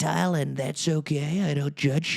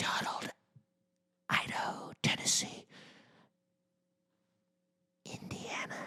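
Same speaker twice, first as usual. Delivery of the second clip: breathy, hushed whisper, very close and soft. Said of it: "she'll just whisper".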